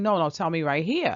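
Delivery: ordinary talk, nothing marked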